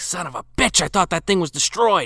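grumbled words. Retelling a film scene, imitating the leprechaun: Warwick muttering to himself. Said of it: "you hear Warwick muttering to himself".

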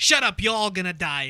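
failed put-on New England accent. Recalling a street-smarts talk, quoting its speaker: JJ Bittenbinder impression, New England accent. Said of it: "I can't do a New England accent".

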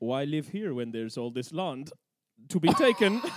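put-on Dutch-accented voice. Telling the history of the Dutch settlement at Cape Town, quoting settlers: put-on Dutch accent. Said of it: "that's my Dutch accent".

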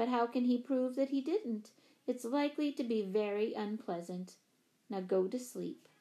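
ordinary delivery, nothing marked

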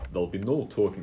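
bad, failed attempt at posh Russian accent. Voicing the steward of the games stopping the talk: failed posh Russian accent. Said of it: "I can't do the accent".

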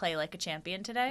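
ordinary talk, nothing marked

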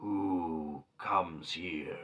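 rumbling, growly tree-creature voice, drawn-out "who". A game master voices a hidden figure speaking from the trees to a player: growly voice. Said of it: "you suddenly hear this growly voice".

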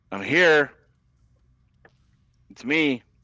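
high, carrying holler. Narrating her walk to the mine entrance, voicing her hollering into the cave. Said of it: "She kind of hollers into the cave".

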